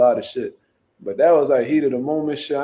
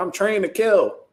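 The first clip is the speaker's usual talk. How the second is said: put-on raised bragging young man voice; 6 semitones higher than usual.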